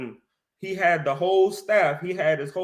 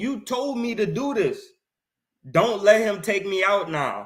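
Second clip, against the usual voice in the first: acted pleading voice; 2 semitones higher than usual. Acting out Jacob pleading with Yahweh during scripture study: acting out a plea. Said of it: "He's pleading with him".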